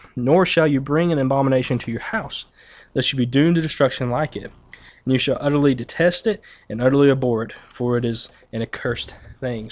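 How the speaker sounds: normal talking voice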